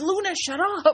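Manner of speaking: very high, fed-up, pissed-off snapping, acted out. Retelling how the listener snapped at whining luna while recording, retelling an angry outburst. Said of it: "finally you just got pissed off".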